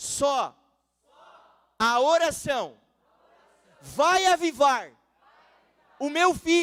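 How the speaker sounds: very loud, high, swooping, drawn-out shout. Preaching on prayer, urging the listeners to shout too: shouting. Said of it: "Eu tô gritando aqui".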